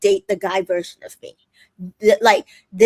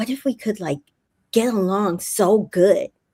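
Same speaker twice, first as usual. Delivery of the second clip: imitated whispering. Retelling what a reality show contestant said to a man: imitating someone whispering. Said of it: "and she starts whispering".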